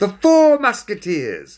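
loud, very high-pitched announcing voice. Reading a children's story, a character announces to the others in a loud voice. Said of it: "announced in a loud voice".

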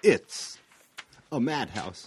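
loud, grand, hammy, overacted delivery. Quoting Planet of the Apes to celebrate the team-up, do Shatner as Charlton Heston. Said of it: "Now you're doing Shatner as Charlton Heston?".

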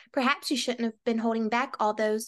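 normal talking voice

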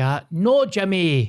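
high, fake Scottish accent. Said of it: "So he's like".

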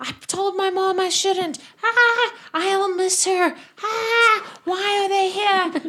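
put-on screams and incoherent mumbles. Describing a scene where a third person panics, mock screaming and incoherent mumbling. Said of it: "start screaming and mumbling incoherent things".

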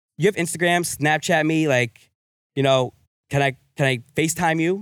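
normal talking voice

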